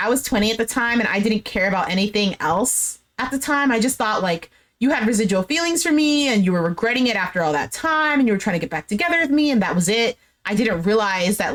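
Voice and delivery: ordinary talk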